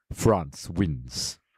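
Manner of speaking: breathy, hushed arena announcer declaration. Announcing a match result in a put-on Mortal Kombat announcer voice. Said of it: "in my Mortal Kombat voice".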